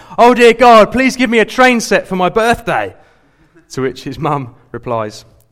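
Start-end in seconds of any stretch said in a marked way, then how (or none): 0.2-3.0 shrill, very loud, high, top-of-the-lungs shout. Telling a story of a little boy praying before bedtime: retelling a boy's shout. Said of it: "he suddenly shouts at the top of his voice".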